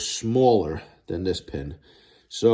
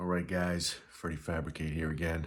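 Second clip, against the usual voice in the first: low, very quiet, hushed half-whisper; 5 semitones lower, 13 dB quieter than usual. Freddie Fabricate greets his audience, half-whispering. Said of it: "I don't know why I'm whispering".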